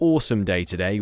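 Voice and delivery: ordinary delivery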